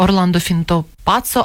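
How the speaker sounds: plain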